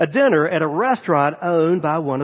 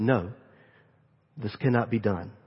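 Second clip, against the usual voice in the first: quiet, hushed half-whisper kept under the breath; 7 semitones lower, 8 dB quieter than usual. Retelling the restaurant owner refusing to let him pay: imitating a quiet half-whisper. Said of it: "he said in a quiet whisper".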